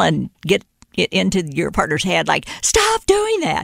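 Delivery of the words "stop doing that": high, slow mock yell. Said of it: "you don't have to scream and yell".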